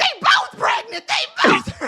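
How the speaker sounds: very high, loud hollering yell. Retelling the moment both sisters were found pregnant: imitating mama yelling. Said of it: "mama yelling".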